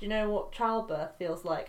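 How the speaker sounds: plain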